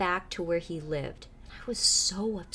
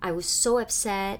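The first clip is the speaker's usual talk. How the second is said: plain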